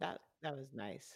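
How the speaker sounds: sarcastic, dry tone. Telling a story about being stuck on a boat, sarcastic. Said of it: "I'm saying it sarcastically".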